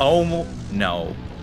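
ordinary talk

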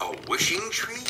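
gasping out the words. An engine hears from a friend about a wishing tree, gasping. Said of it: "gasped Henry".

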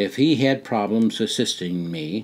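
plain

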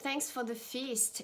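ordinary talk, nothing marked

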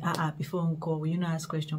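plain

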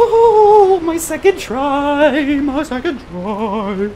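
high, loud, slow triumphant cry.

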